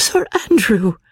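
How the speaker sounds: gasped exclamation. Narrating a woman who remembers a forgotten friend; gasping. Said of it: "she gasped".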